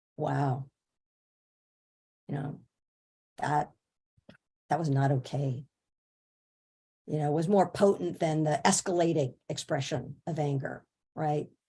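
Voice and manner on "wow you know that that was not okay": deliberate, low, quiet, spaced out with long silences. Retelling how a point was delivered to a class: lowered quiet voice with silences. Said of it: "when I lowered my voice and really wor-, used silence and would just speak it like".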